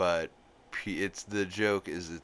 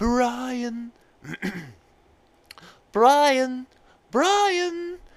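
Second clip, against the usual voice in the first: very high, loud, long drawn-out shrill calling; 12 dB louder than usual. Showing how you get into the voice, call for Brian in a Stewie voice. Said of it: "whenever I'm trying to do a Stewie voice".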